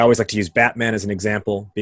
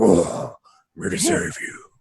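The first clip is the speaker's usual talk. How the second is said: gruff, heroic delivery. Describing what Batman would say swooping into a park, Batman voice. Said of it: "You do a great Batman".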